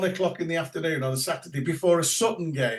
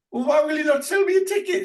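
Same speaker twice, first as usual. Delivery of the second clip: put-on Welsh accent in a very high-pitched voice; 11 semitones higher, 5 dB louder than usual. Retelling a welsh caller arguing with a ticket seller on the phone, welsh accent. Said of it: "it was as Welsh as ever".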